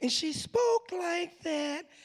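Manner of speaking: very high-pitched, whiny voice. Recalling a fourth-grade teacher, mimicking Miss Cleveland's whiny voice. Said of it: "And she had a whiny voice".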